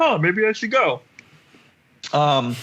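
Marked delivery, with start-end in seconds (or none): 0.0-1.0 high-pitched cartoon frog puppet voice. Retelling what a character says after getting a party flyer: Kermit the Frog voice. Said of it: "did she turn into Kermit the Frog?".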